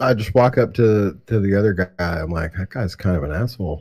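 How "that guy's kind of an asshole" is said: muttered very low under breath, faster. In a role-play, the speaker's character walks up to another guy discreetly; super low, under my breath. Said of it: "super low under my breath".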